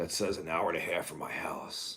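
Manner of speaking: put-on gruff old-man voice. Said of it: "Like in that Clint Eastwood voice".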